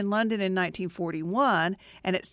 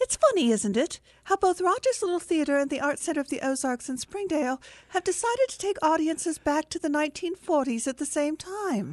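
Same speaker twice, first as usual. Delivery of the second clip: very bad, clumsy, pitched-up fake British accent; 7 semitones higher than usual. [name], features editor, introduces his newspaper segment: very bad British accent. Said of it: "it's a very bad British accent".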